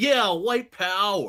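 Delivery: mocking, tongue-in-cheek, derisive, sarcastic. Retelling a line from a video that someone said mockingly: imitating a derisive tone. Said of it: "says it with derision in his voice".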